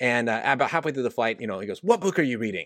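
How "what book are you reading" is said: put-on angry voice. Retelling a fellow passenger on a flight asking about the speaker's book: imitating an angry voice. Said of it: "it was kind of an angry voice like that".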